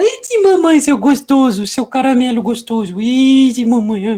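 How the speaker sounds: put-on doting baby talk, high, slow and cutesy. Showing how you have to talk to a dog, in a cutesy voice for dogs. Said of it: "Pra falar com um cachorro, você tem que falar".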